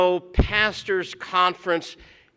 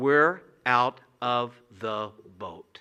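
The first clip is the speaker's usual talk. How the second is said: very low, hushed half-whisper; 7 semitones lower, 4 dB quieter than usual. Retelling the words spoken together with a companion, in a half-whisper. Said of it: "And in a whisper".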